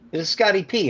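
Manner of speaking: put-on New York accent. Retell a manager's phone call to Scotty P, in Jack Leitenberg's thick New York accent. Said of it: "N thick New York accent".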